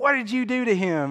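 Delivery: mock, high-pitched, accusing scream. Retelling how a woman screamed at the speaker's cousin, retelling a scream. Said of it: "she starts screaming at him".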